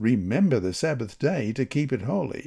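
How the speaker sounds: usual speaking voice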